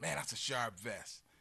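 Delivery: ordinary delivery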